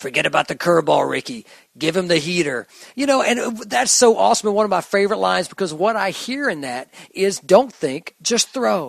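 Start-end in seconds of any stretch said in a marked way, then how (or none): 0.0-2.7 rough, gruff, crusty movie-coach voice. Retelling a movie scene, quoting the coach's line to Ricky: gruff, crusty coach voice. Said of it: "you hear the gruff and crusty voice say".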